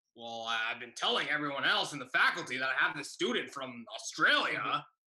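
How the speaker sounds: guttural teacher voice.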